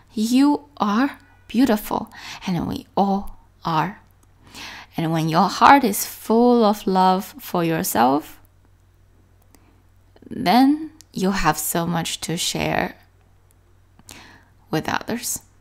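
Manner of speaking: voice catching and choking up, tearful. Reading a paragraph aloud to listeners and tearing up. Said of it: "Sorry that I am tearing up a little bit".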